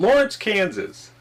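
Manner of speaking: chin-up, proud tone. Speaker retells answering a man who asked where they're from, retelling a proud answer. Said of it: "head up high".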